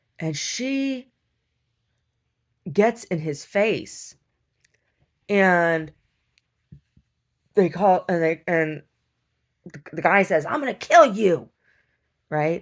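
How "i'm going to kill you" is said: loud, high-pitched, aggressive screaming. Retelling how a young man at a counter threatened a woman: retelling a scream. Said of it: "he's like screaming".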